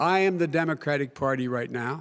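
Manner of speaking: plain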